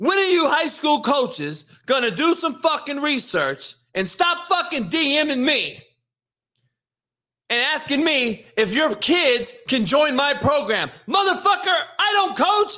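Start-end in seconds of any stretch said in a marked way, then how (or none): 0.0-10.9 furious yelling rant. Ranting on YouTube at high school coaches who keep DMing him, mad ranting. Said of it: "why I'm fucking mad at coaches?".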